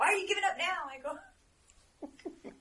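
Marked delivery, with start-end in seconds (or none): 0.0-0.9 very loud, high shout, as if far off. Shouting a question at a figure from across the way: shouting a question. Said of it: "I'm gonna shout a question from over here".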